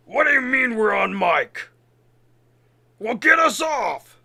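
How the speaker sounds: alien creature voice with intercom sound. Narrating a game scene, the speaker voices someone over the intercom: Krogan voice. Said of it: "A Krogan voice is".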